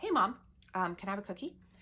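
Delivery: ordinary delivery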